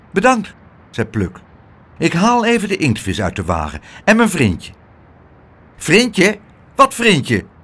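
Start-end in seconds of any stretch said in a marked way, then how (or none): 5.7-7.4 suspicious, wary, distrustful, pitched-up. The little porter, told of a friend, questions it, suspicious. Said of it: "Riep het portiertje argwanend".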